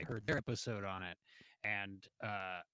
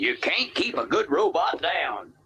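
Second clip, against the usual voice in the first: ridiculous cartoon Southern accent; 7 semitones higher, 16 dB louder than usual. Quoting a robot's line from a movie, in a cartoonish southern accent. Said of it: "ridiculously cartoon Southern".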